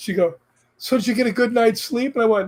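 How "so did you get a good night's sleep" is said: put-on perky, cheerful voice, higher. Retelling how the nurse greeted them each morning: imitating a perky nurse. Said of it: "all perky and stuff".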